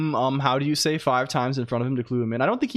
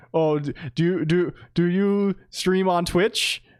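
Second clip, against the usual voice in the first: put-on awkward, nervous stammer, higher pitched; 5 semitones higher than usual. Retelling meeting someone at a booth: imitating own awkward stammering. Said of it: "I extremely awkwardly was like".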